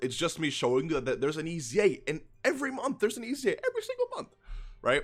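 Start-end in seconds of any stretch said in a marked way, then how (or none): 2.1-5.0 high, swooping, worked-up passionate insistence. Showing viewers something on screen, voice gone high. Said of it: "I don't know why my voice got so high".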